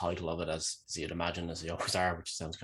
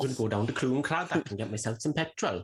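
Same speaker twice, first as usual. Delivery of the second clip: jokey put-on Welsh accent, pitched up; 7 semitones higher, 4 dB louder than usual. Showing what a Welsh character would sound like: Welsh accent. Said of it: "That's a Welsh accent for you".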